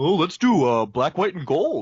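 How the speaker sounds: put-on Minnesota or Canadian accent. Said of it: "having a Minnesota or Canadian accent".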